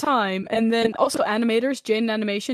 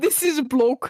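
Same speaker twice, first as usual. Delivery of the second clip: put-on Dutch accent, higher pitch; 3 semitones higher than usual. Streamer showing how they first opened English streams, in a put-on Dutch accent. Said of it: "the accent that I'm doing".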